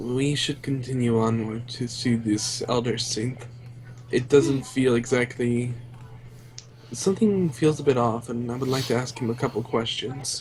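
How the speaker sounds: quiet, hushed whisper under the breath. Voicing a companion who leans in to another character: whispering in character. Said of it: "He kinda whispers over".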